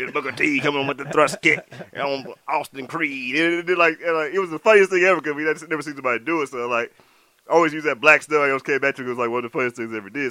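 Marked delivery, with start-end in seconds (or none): 0.0-3.3 wrestling announcer style, like ringside commentary. Recalling a TNA skit where Booker T announced himself wrestling, doing a Booker T announcer impression. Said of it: "and he had his voice too. He was like".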